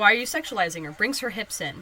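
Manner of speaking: ordinary talk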